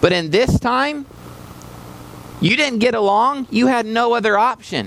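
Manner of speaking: high, passionate, fiery preacher-like delivery. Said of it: "I'm very passionate about this".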